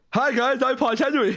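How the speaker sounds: very high-pitched voice. Doing a requested impression after offering to: Paul Henry impression. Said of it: "a really good impression of Paul Henry".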